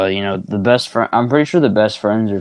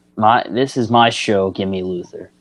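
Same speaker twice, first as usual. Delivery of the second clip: usual speaking voice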